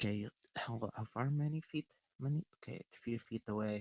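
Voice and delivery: very soft, hushed mutter to oneself. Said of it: "you can hear her mutter".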